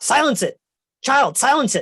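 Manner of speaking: frantic, alarmed, panicked character voice. Voicing a character who suddenly panics at the noise: panicked NPC voice. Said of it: "panicked. He goes".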